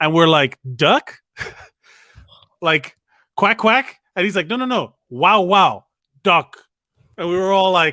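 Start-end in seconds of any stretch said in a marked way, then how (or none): 4.5-6.6 slow, drawn-out put-on Chinese accent. Retelling a story, the speaker quotes a man answering whether the meat is beef: imitating a Chinese accent. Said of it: "He had an accent".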